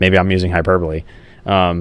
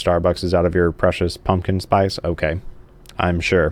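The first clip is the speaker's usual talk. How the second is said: ordinary talk, nothing marked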